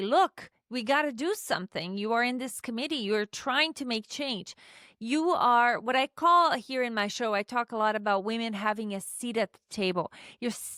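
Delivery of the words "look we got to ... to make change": ordinary talk, nothing marked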